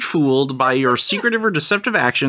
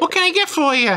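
very high, squeaky put-on bartender voice; 11 semitones higher than usual. Voicing a bartender cleaning a glass in a game scene, squeaky bartender voice. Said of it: "Squeaky voices all around".

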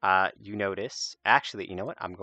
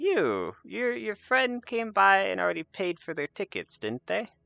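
put-on very high, swooping elderly goblin voice; 12 semitones higher than usual. Voicing an elderly goblin ticket seller greeting the fairgoers: elderly goblin voice. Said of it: "and says".

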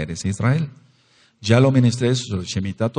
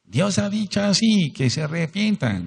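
shrill, squeaky, very high prophet voice; 11 semitones higher than usual. Mocking how films voice a prophet: squeaky voice. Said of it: "le ponen una voz chillona".

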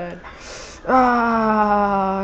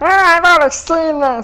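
loud, high-pitched, bored and jaded tone; 7 semitones higher, 5 dB louder than usual. Retelling what viewers say about replays: imitating viewers complaining. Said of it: "then people are like".

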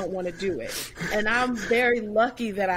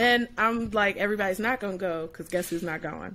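usual speaking voice

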